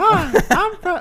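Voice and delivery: very high, shrill, loud voice. Showing the others how Fred talked: Fred voice. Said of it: "It's like".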